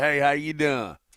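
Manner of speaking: put-on Southern twang accent. Performing a greeting after being asked for a Southern twang. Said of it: "Can I have a little bit of that twang?".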